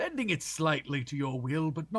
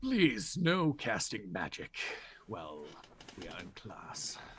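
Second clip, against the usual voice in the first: very low, deep, slow character voice; 8 semitones lower, 4 dB quieter than usual. Voicing an Elder Lich who speaks to Nathaniel: Overlord voice. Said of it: "this is a hundred percent him".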